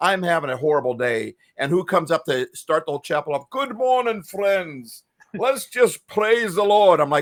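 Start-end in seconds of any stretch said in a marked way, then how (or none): 3.5-7.0 put-on high English accent. Recalling a cheerful professor's greeting: imitating Doctor Owen's English accent. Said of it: "he had this English accent".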